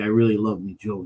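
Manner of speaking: mock muttering. Retelling what someone secretly said, imitating him muttering under his breath. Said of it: "under his breath".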